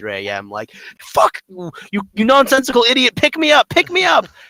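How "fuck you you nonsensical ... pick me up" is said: very high, shrill, furious top-of-the-lungs scream. Retelling chaotic gaming nights with friends at 3 AM: imitating screaming at top of lungs. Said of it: "screaming at the top of our lungs".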